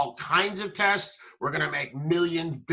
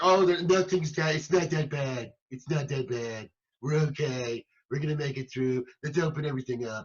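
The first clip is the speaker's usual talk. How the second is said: mocking, brushing-it-off tone. Imitating the leader who wants to open everything up: mocking impression. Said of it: "good impression".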